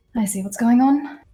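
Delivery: very soft-spoken, quiet voice. A player voices their character in a tabletop game, very quietly. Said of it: "Renava just very quietly goes".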